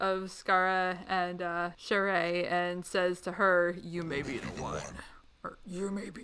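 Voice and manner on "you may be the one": demonic voice, much lower, quieter, faster. Retelling what he says to her after the kidnapping, deep demonic voice. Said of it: "I can't make my voice that deep".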